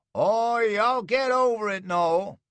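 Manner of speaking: very high, loud croak, mock soothing. Reading a story aloud, a father answers his son who begs to die, croaking voice. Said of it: "J B's voice croaked out of the shadows".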